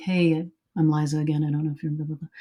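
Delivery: mock soft, humble manner of speaking. Showing how to approach someone on set, speaking humbly and softly. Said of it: "I'll just do it very sort of humbly and softly".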